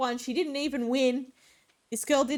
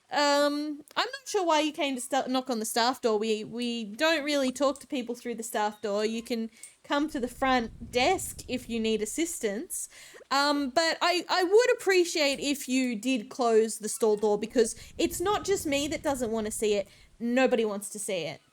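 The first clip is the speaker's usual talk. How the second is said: ordinary delivery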